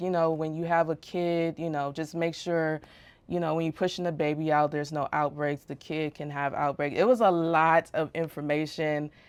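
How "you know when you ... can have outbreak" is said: normal talking voice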